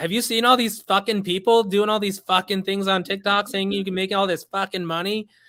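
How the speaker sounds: put-on Boston accent, ranting with attitude. Speaker recreates his first tiktok video, doing a put-on boston accent. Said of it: "I kind of put on my Boston uh, accent and my my uh, my Boston attitude".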